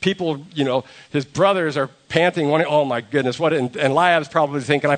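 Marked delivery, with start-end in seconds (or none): none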